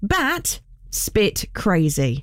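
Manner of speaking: very slow, drawn-out delivery. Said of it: "You've got to say it very slowly".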